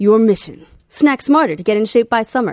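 loud, put-on on-air radio announcer read. Reading a passage aloud to the others, radio announcer voice. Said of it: "Allow me to put on my radio voice and read this".

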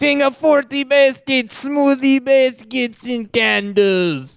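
very high-pitched, put-on Eastern European accent. Playing a self-proclaimed king, in an almost Borat accent. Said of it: "He was like almost Borat".

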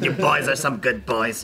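rough, gravelly voice. Imitating a woman who smoked a lot of cigarettes: gravelly smoker's voice. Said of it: "she talked like this because she smoked a lot of cigarettes. With a gravel voice".

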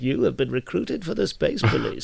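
rough, creaky put-on character voice, swinging pitch. With a blanket over the head, doing an Alec Guinness voice. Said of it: "I do an Alec Guinness voice of going like".

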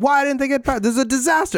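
put-on yelling. Retelling how someone on the radio was going off: imitating someone yelling.

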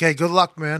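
normal talking voice

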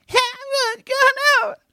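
very high, squeaky, strained voice-lost sound. Retelling squeaking through a show after losing the voice: squeaky, lost voice like Bobcat Goldthwait. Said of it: "It was the craziest voice".

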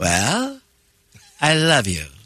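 very slow, stuffed-up, swooping sing-song voice. Asked to imitate the other speaker, doing the impression. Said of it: "now do your impression of me".

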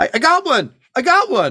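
wild, shrill, very high, swooping yell. Voicing someone firing from the platform during a chase: yelling. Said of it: "just yelling".

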